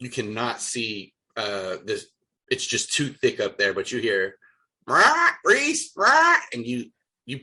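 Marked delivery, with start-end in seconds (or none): 4.9-6.4 very high, loud, shrill parrot squawk. Describing a sound the players hear but cannot see, parrot voice. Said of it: "why are you a perfect parrot voice or cockatoo".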